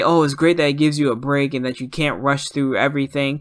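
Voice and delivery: ordinary talk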